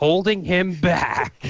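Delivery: play-acted furious outburst. Retelling a sitcom scene, quoting Frasier leaving the closet: imitating a furious outburst. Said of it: "so furious".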